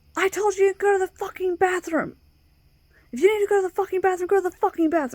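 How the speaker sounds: put-on very high-pitched, shrill scream. Retelling how a teacher answered at the desk: imitating a teacher screaming. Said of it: "he screams".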